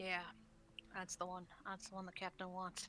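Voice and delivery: low, breathy, dropped-voice near-whisper. As the group passes by, their friend speaks up, voice dropped a little. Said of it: "your friend kind of drops his voice a little".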